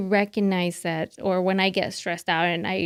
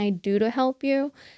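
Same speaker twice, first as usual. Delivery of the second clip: plain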